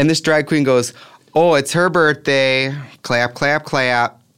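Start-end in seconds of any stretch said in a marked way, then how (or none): 1.3-4.1 put-on slow, drawn-out, intense, thick Midwestern accent. Imitating a drag queen at a club announcing a birthday, intense midwest accent. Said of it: "she had the most intense Midwest accent".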